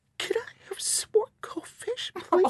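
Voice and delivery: put-on very high, tiny little-girl voice. Retelling a girl at the library coming up to her: itty bitty voice. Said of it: "in this itty bitty voice".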